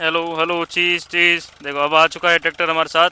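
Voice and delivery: loud calling out.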